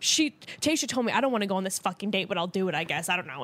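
mock grumbling, griping complaint tone. Retelling a contestant getting ready for a date: imitating someone complaining to himself. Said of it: "kinda like bitching to himself".

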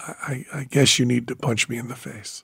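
mock very hushed, quiet, stammering, sheepish delivery. Retelling own confession about putting out the bootlegs: imitating own sheepish reply.

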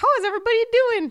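put-on tiny, very high childlike puppet voice, pitched way up. Reading out a post from Elmo, doing the Elmo voice. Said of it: "That's my Elmo".

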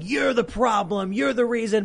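mock yelling, high and ranting. Retelling a stranger screaming at an old photographer, imitating someone yelling. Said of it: "starts yelling".

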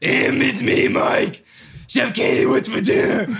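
mild yell, hollered. Imitating a roommate heard while napping: Mike voice screaming. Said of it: "That's my Mike voice, just screaming".

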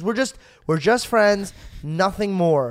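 play-acted, thoroughly fed-up, completely aggravated and exasperated. Retelling how a girl turned around and answered: imitating a completely aggravated girl. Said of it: "completely aggravated".

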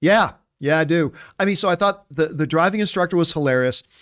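ordinary delivery

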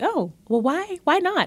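very high, slow, dry, wry delivery. Retelling a late-night talk, imitating father's wry tone. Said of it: "in his very wry way".

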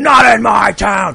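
very slow, loud, drawn-out scream. Telling how a cop grabbed a man against a fence, retelling a cop's scream. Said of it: "slams him up against a wrought iron fence and screams".

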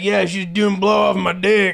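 put-on Southern trucker accent. Mimicking how such stories usually get told, in a southern trucker accent. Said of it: "that accent was beautiful".

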